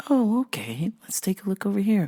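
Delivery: soft, quiet, toned-down, easygoing manner of speaking. Retelling helping an upset customer: retelling own soft-spoken voice. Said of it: "I just kept talking softer and softer".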